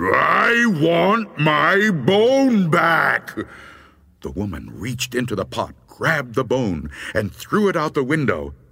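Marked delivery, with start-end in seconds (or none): 0.0-3.4 enraged booming roar, delivered very slowly. Reading a story, the voice speaks again to the woman, very angry and loud. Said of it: "Now it sounded very angry, and it was so loud that the whole house shook".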